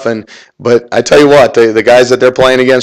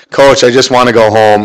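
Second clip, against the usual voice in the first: ordinary delivery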